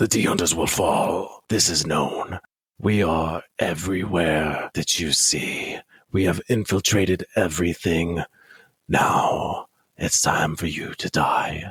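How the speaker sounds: voice of a possessed demon. Narrating a game, the speaker voices a nun addressing the player: demonic voice. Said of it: "in like now her demonic voice".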